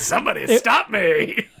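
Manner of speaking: comic put-on voice like a comedian's dog. Describing how the dog's voice in a movie sounded: Jim Carrey-ish voice. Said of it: "It was more like a Jim Carrey-ish".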